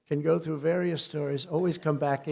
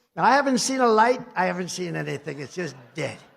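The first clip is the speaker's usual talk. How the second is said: ordinary talk, nothing marked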